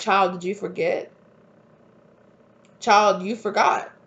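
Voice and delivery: put-on booming voice. Recounting what they were told, imitating a booming voice. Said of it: "I'm hearing like a booming voice".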